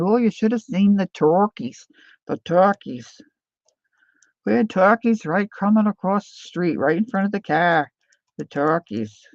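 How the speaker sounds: put-on plain Yankee New England accent. Retelling what a guest's dad said about turkeys: imitating a New England accent. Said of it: "his dad had that New England accent".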